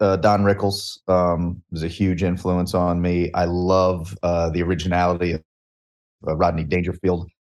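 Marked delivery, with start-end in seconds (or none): none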